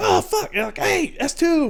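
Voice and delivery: blurted, very high, alarmed panicked outburst.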